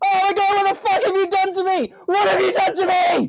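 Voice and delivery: very high, loud, shrill, full-throated shouting. Voicing a character in a told scene, loud shouting. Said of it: "apologies for the volume".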